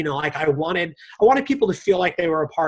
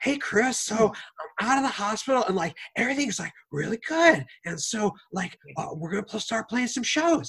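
put-on high, young-sounding voice full of energy; 5 semitones higher, 5 dB quieter than usual. Retelling what Bill said to Chris, imitating Bill's youthful voice. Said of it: "sounds Youthful".

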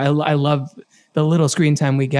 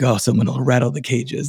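put-on low raspy whisper; 3 semitones lower than usual. Imitating Batman's line about the cages: lowered raspy whisper Batman voice. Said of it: "he lowers his tone and has that sort of raspy whisper".

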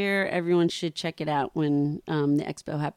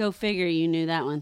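plain

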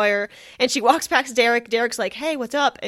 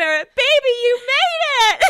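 shrill, very high, loud, drawn-out yell; 14 semitones higher, 6 dB louder than usual. Retelling a dance party scene, imitating Cristina yelling. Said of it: "Christina yells out".

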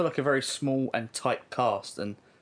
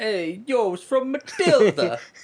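put-on Italian accent, very high and loud; 10 semitones higher, 7 dB louder than usual. Speaker chiming in while friends discuss a movie quote, italian accent. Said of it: "My Italian accent".

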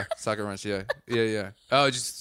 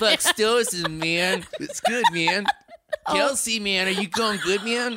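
put-on very high, slow stoner hippie drawl; 11 semitones higher, 4 dB louder than usual. Mocking how someone talks, asking a question in a hippie impression. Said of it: "Is that what he talks like?".

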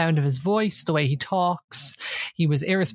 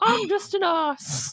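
higher, mocking put-on voice. Retelling a housemate mocking another by talking with his arse: impression of Sam. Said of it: "Let me do an impression of Sam".

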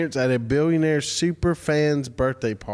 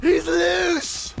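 very high, laughing, panicked put-on yelp. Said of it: "That's exactly it. It's like you were there".

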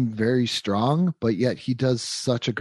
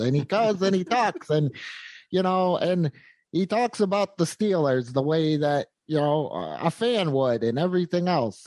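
tiny nasal announcer voice, higher pitched; 6 semitones higher than usual. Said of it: "kinda sounds like this".

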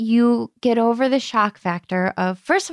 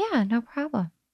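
hushed, soft, quiet little voice; 7 dB quieter than usual. Answering a thank-you from the other speaker, said quietly. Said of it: "Why'd you say that so quiet?".

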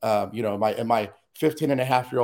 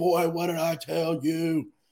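mock furious, high, drawn-out screaming; 5 semitones higher than usual. Retelling the father coming down the street: imitating father screaming.

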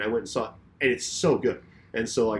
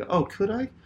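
put-on very high, sarcastic tone of feigned interest; 9 semitones higher than usual. Retelling own earlier reply to a suggestion: imitating own sarcastic remark. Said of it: "I was being sarcastic".

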